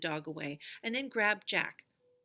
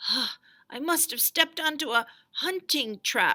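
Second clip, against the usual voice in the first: choked, throttled, strangled, high raised voice; 6 semitones higher, 6 dB louder than usual. Jack, hanging by his ankle from a rope trap, in a strangled voice. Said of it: "he said in a strangled voice".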